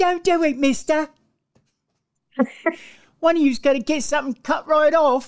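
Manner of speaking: put-on high-pitched little child voice with English accent. After the other speaker praises your child English accent, show it off in a Tiny Tim voice. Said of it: "Little child Timmy".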